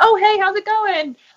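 friendly, mild mock yell, pitched high and carrying. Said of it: "You yell across the street".

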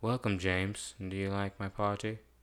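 monotone villain voice. Pitching a blind villain greeting James Bond: monotone villain voice. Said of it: "he says monotone things".

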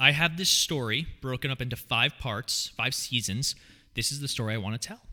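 plain

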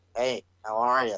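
dull, flat, slow and bored-sounding. Acting out a wrestler changed after a knockout: acting out a boring person. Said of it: "Instead of friggin' being all bro".

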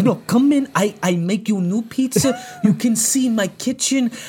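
put-on Romanian accent. Retelling a prank call, the speaker imitates the romanian guy, imitating a romanian accent. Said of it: "He's like some Romanian guy".

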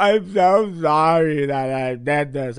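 very slow, loud, drawn-out, exaggerated fake sobbing. Imitating creators in fake apology videos: imitating fake crying. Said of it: "fake crying".

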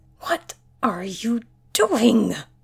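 loud, pressing stage whisper. Dr. Weber confronts someone napping, whisper-yelling. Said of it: "Weber whisper yelled".

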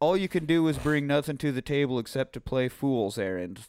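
ordinary talk, nothing marked

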